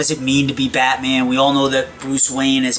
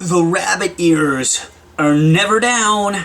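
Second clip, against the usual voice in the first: slow, higher, dramatic put-on voice. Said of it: "And as you can see".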